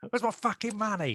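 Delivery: very high-pitched, menacing British gangster voice. Repeating a film line an actor must say often, use a British gangster voice, like a death threat. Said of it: "Everything he says sounds like a death threat".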